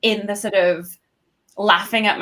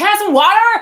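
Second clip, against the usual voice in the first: very high, loud, hollered American accent shout; 14 semitones higher, 7 dB louder than usual. Showing how they order water in a loud bar, loud american accent. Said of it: "you want to like really shout out loud".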